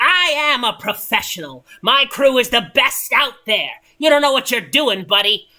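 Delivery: curt, sharp, loud snap-back. Narrator voices One Eyed Greg answering another character, One Eyed Greg snapping back. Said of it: "One Eyed Greg uh, snaps back".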